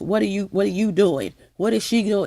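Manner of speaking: ordinary talk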